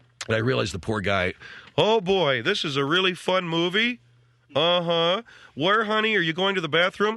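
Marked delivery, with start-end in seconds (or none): 1.8-7.2 put-on loud old man voice, higher. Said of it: "everything's talking about at this level".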